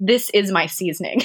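normal talking voice

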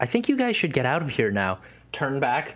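sweet, kind, innocent-sounding voice, rattled off. Recounting a scene, the speaker voices Agave: Agave's soft, sweet voice. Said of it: "they hear that soft".

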